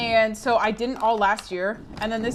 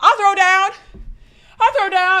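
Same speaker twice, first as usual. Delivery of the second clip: winded, breathless, shrill, very high and loud; 9 semitones higher, 9 dB louder than usual. Speaker who was just sprinting talks, out of breath. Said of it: "I'm out of breath".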